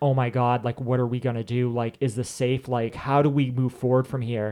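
usual speaking voice

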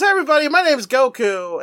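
high-pitched, energetic, lively voice. Retelling a cartoon hero's entrance line: imitating Goku. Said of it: "He goes".

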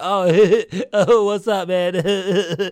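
put-on, very slow, through odd laughter. Retelling a returning customer's greeting: imitating a customer laughing oddly. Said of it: "why you laughing like that?".

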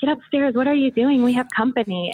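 put-on scolding, telling-off with yelling. Retelling being caught by mom downstairs: imitating mom yelling. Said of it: "my mom yells at me".

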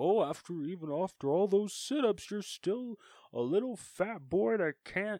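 jeering, clown-like taunt, pitched high and loud. Recalling him mocking Ben as he is getting buried alive, attempt a Pennywise voice. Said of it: "trying to sound like Pennywise".

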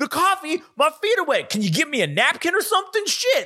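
mock yelling. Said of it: "they're yelling at each other".

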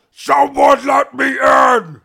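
very high, very loud, long drawn-out yell. Voicing Burbog calling from outside to be let in: Burbog yelling. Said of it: "Burbog yelling".

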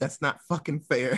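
ordinary delivery

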